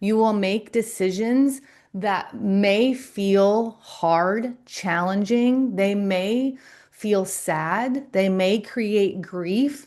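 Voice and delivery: slow, unhurried, each word given weight. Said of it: "I'm actually speaking slowly to you".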